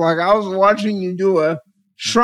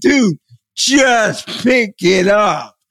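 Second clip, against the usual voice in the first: put-on screaming voice. Retelling watching the other speaker do a puzzle: imitating screaming at the TV. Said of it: "I'm sitting there screaming at the T V".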